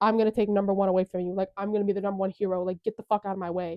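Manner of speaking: put-on angry, grouchy voice. Retelling Bakugo telling All Might off: imitating an angry Bakugo. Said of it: "fucking grouchy as fuck".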